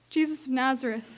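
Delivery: ordinary delivery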